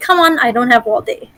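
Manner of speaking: put-on haughty, snooty elf voice. Showing a student how to play the haughty elf, haughty elf voice. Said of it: "you're gonna play the haughty elf".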